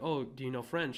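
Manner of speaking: ordinary talk, nothing marked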